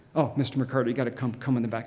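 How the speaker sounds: mock grave, low, very serious, dead-serious tone. Retelling how the store manager called them to the back: imitating a very serious manager. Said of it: "The manager is very serious".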